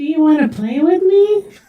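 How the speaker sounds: eerie, creepy, very high, modulated horror-villain voice. Retelling how streamers in proximity chat sound: creepy Annabelle or Jigsaw voice. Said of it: "trying to act as, like, Annabelle or Jigsaw".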